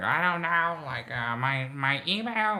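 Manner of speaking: put-on loud, high, befuddled, rambling old-man voice. Retelling an old man at the dermatologist's front desk: imitating an old man talking loudly. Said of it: "giving his personal business loud as fuck".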